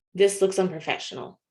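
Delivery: plain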